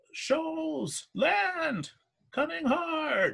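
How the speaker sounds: very high shout, almost screaming. A crewmate on lookout high on the mast warns everyone, almost screaming out. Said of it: "almost screaming out".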